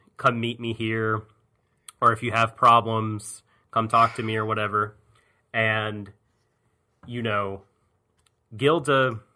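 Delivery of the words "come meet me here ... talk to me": ordinary delivery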